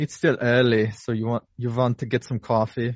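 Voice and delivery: horrible fake put-on German accent. Podcast host introducing a guest and offering coffee, horrible german accent. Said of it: "it was a horrible German accent".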